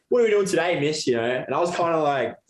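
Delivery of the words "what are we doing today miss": play-acted laid-back, offhand, high casual tone. Retelling how a new student walked in and spoke: imitating Joel's laid-back attitude. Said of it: "his attitude was just, like".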